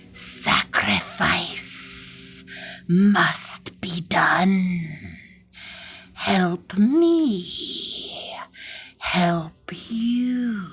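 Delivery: very slow, swooping strange creature hiss. A thing under the bed beckons the frightened toys, strange hissing voice. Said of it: "A strange voice hisses".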